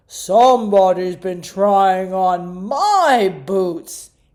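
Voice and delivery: very loud, booming big voice. Narrating the bears' story as Papa Bear finds his boots: Papa Bear booming big voice. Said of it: "he boomed in his big voice".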